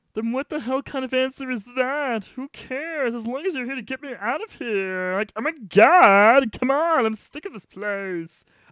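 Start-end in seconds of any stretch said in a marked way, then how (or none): 5.2-8.5 whiny cartoon voice, much louder. Playing a character who wants to get out of this place, Lumpy Space Princess voice. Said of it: "I just went from Lumpy Space Princess voice".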